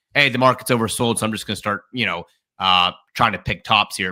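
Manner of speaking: ordinary talk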